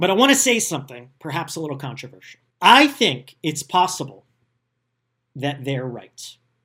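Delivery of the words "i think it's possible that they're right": I think and possible stressed, loud and slow. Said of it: "I wanna emphasize the word possible".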